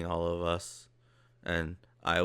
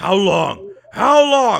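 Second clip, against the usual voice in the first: drawn-out, swooping, shrill, booming ogre bellow; 14 semitones higher, 17 dB louder than usual. Voicing an ogre shaking a goblin by the neck: ogre voice. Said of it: "grabs the goblin by his neck ... he goes".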